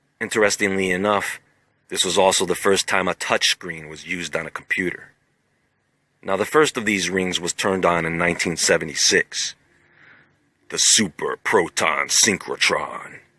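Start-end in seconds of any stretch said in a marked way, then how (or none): 10.7-13.1 deep, low voice. Announcing the name of the first ring: deep voice. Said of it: "you gotta say that with a deep voice".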